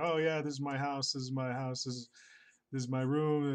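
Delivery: mock drunken slur, sloppy, words running together. Recounting a visit to an inn, acting out a drunk man: imitating drunken slurring. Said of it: "drunkenly he keeps slurring like".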